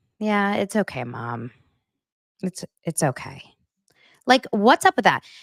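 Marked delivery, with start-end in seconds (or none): 0.2-3.4 half-hearted, unenthusiastic, reluctant polite tone. Imitating kids who dislike the dinner made for them: imitating kids' unenthusiastic tone. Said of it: "you sound like my kids when I make dinner that they don't like".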